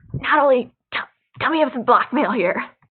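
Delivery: loud, poor stage whisper. During a role-playing game, speaking to Natalie, in a bad stage whisper. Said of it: "You're bad at the stage whisper".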